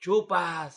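loud, high jeering and teasing shout. Retelling how he yelled at a girl whenever she lost and had to take a shot, retelling a jokey yell. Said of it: "yo por cagazón le gritaba".

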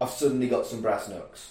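normal talking voice

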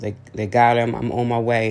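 normal talking voice

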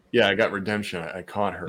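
normal talking voice

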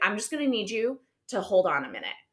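acted stern, firm, no-nonsense tone. Retelling what was said to a background actor on set: imitating own stern tone. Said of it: "And I was just very stern".

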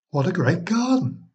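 high, overeager exclaiming, a little too eager. A woman looks at the back garden and exclaims a little too eagerly. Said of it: "she exclaimed, a little too eagerly".

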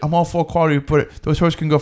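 put-on British accent. Retelling what a man said while walking, a speaker uses a British accent. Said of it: "what is your British accent".

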